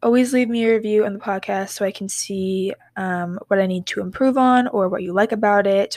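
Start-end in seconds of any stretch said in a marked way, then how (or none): none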